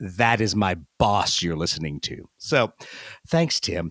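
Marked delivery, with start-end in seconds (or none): 0.0-2.3 mock condescending tone, lower. Retelling how she told her husband who he heard: imitating a condescending tone. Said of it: "looks at him in the most condescending way possible".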